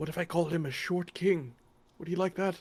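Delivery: speaking softly, whispering. Asking another character a question during the game, whispering. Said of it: "kinda whispering towards you".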